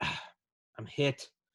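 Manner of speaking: mock, mildly irritated man's voice. Retelling what a man said after being shot, imitating mild irritation. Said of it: "It sounded like he was a little irritated".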